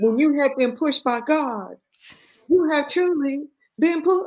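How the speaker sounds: put-on very high, laid-on thick Southern Texas accent. Quoting what a woman told the speaker, in a thick southern texas accent. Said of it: "this thick Southern Texas accent".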